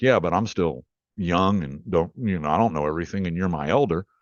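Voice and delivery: ordinary talk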